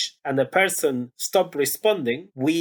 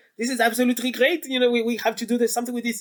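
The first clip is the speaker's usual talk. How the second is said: imitated French accent, pitched higher; 8 semitones higher than usual. Retelling how a researcher on a train reacted: French accent. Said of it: "with his French accent".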